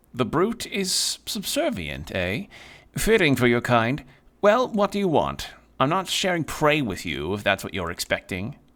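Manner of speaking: jaded regal cat voice. Voicing a small cat who refuses to share prey: slight cat speech accent. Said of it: "The cat speaks in a slight cat speech accent".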